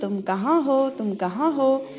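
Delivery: plain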